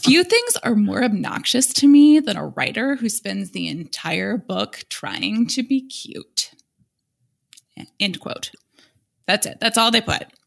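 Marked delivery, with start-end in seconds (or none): 0.0-6.5 play-acted, slow, drawn-out delivery. Reading a one-sentence book review aloud, in the reviewer's imagined tone. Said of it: "I'll read it in the tone of voice that I think this person wrote it in".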